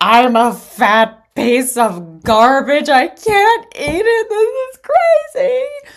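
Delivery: mock very slow, high, loud, drawn-out sobbing wail. Recalling craving Burger King and turning to someone, retelling own sobbing. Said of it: "I turn to this person and I'm sobbing".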